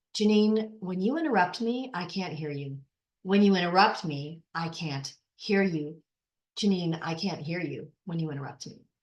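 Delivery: calm, low-voiced. Speaker demonstrating how to answer someone who keeps interrupting, low calm voice. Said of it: "keep your voice low and repeat their name".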